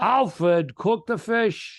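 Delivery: put-on high, slow, drawn-out thick Providence accent. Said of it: "that accent you're giving him?".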